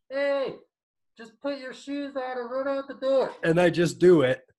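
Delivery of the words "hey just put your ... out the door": very high, soft, small little voice. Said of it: "this little voice that's like".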